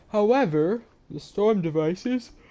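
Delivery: talking through a yawn. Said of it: "I can't stop yawning".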